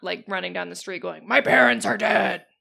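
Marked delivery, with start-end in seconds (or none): 1.3-2.4 rough, loud shouting voice. Retelling a video of Batman running down the street: imitating Batman yelling. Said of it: "And yelling at people".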